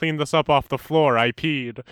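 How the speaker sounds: ordinary delivery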